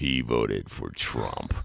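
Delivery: very low, creaky, foreboding, ominous narrator voice. Describing the first attack commercial an opponent would air, in an ominous attack-ad voice. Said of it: "it would be the ominous voice".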